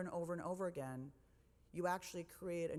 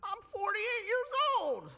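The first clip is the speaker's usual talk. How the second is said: dumb silly put-on voice, much higher, louder; 10 dB louder than usual. Talking about their book, stating their age in a dumb voice. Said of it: "I don't know why I do that dumb voice".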